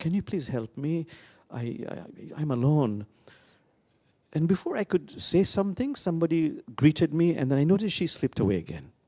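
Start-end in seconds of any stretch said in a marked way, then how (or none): 0.0-3.0 very hesitant, slow, halting delivery. Speaker retells what a shy woman finally said to them, imitating a hesitant voice. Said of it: "in a very hesitating voice".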